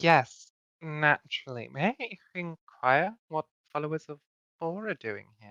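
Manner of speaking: gracious, mannered, very polite and courteous tone. A player speaking as their character to strangers met on the road: very polite. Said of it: "give like a very polite smile".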